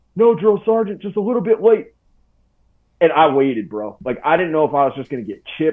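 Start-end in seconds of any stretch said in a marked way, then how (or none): 0.2-1.9 very high, loud, shouted military-style sound-off. Recounting answering a drill sergeant face to face; retelling sounding off loudly. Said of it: "I just sounded off".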